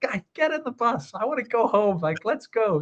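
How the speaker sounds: high-pitched, grumpy, barking coach-style yell. Retelling a coach on the team bus: imitating a grumpy coach yelling. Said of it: "yelling at them".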